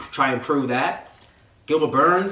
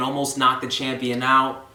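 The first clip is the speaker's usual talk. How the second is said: usual speaking voice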